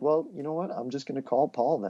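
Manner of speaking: mock light, friendly, playful teasing tone. Retelling what he said to the guy, acting out his own teasing remark. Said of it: "I was in a teasing way".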